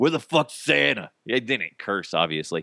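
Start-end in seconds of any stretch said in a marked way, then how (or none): 0.0-1.1 disgruntled character voice, much higher. Recalling the first character from a show, disgruntled Frank with cigar. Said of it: "I imagined he had like a cigar in his mouth".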